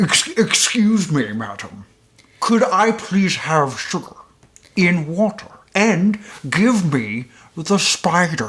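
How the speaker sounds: prim, very proper, well-mannered bug voice. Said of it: "it is Edgar's voice speaking very properly".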